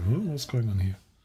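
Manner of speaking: ordinary talk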